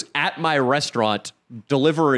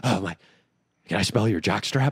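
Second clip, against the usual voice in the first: mock-nervous, put-on jittery delivery; 6 semitones lower, 4 dB quieter than usual. Recounting a visitor who found the speaker's laundry, mimicking him: imitating nervous energy. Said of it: "He had really nervous energy".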